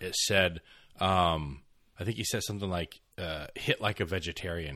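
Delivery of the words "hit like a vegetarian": ordinary delivery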